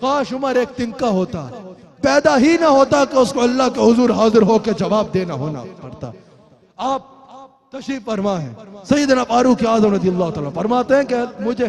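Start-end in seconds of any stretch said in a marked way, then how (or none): none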